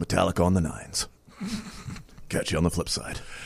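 put-on soft, old-style radio dj patter. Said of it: "then I would get on the radio and say".

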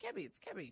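very quick delivery. Unsure how to pronounce a gorilla's name, saying it very quickly. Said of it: "You're saying it very quickly".

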